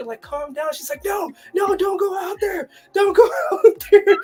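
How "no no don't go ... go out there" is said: high, loud, terrified, hysterical sobbing scream. Recalling a woman panicking at a masked man locked outside, imitating her screaming and crying. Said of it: "screaming and crying".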